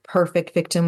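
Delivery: ordinary talk, nothing marked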